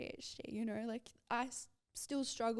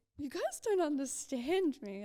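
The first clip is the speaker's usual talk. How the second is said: put-on tearful crying, raised voice; 4 semitones higher, 5 dB louder than usual. Retelling what was said back to friends: imitating own past crying. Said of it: "And I remember crying".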